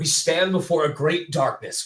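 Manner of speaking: manly-sounding voice. Reading aloud something they wrote, sounding manly. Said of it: "Wow, I sound so manly".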